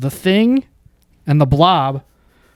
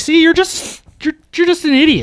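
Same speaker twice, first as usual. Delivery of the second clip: very high mocking voice. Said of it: "they're like".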